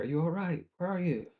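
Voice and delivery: very high-pitched, loud shout calling into the distance. Yelling out for a missing companion in fog: yelling out for someone. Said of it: "I'm gonna yell out for him".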